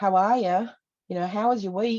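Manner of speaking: put-on slight Antipodean twang. Describing the accents heard among churchgoers, with a little Antipodean twang. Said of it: "you get the little twang".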